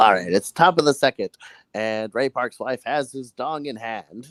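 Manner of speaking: put-on loud, old-time 1950s radio sports play-by-play voice. Pitching a comedy bit to the other speaker, doing a 1950s radio sports announcer. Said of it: "You could do like a sports announcer".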